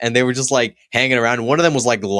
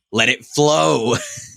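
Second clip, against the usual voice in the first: put-on aggression, higher, slower; 3 semitones higher than usual. Retelling a man telling a kid to drop cheese on a salad, imitating aggressive command. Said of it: "getting more aggressive with".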